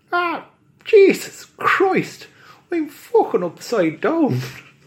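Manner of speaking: thick fake Irish brogue, very high and shrill. In an improvised story, a caught leprechaun hanging upside down speaks, in a thick put-on Irish accent. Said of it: "There's no need to lay on the accent so thick".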